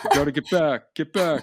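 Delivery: put-on New York accent, pitched high. Repeating a police officer's order to spectators; new york accent. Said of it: "good New York accent there".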